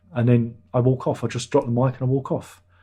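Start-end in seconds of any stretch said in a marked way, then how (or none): none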